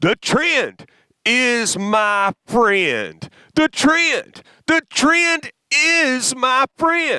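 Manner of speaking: preached with absolute passion, swooping and drawn out. Leading listeners in saying a phrase, with absolute passion. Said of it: "Say it with passion".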